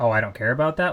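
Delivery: blunt, forward, dismissive don't-care tone. Asking whether someone answers that bluntly, imitating a blunt dismissive reply. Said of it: "just that forwardly".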